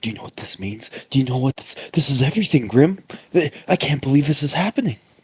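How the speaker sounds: hushed, whispered character voice. Grabbing onto Grim and speaking in character: whispering in character. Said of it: "and I'll whisper".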